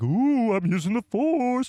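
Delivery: mocking, high, drawn-out, hammed-up fake mystic voice.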